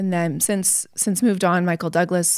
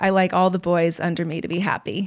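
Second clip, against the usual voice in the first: ordinary talk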